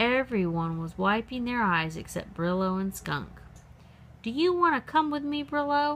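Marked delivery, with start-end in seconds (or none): 4.2-6.0 pitched-up, carrying, cried-out voice. Skunk calls out to Brillo after the cloud of stink: crying out. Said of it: "Skunk cried out".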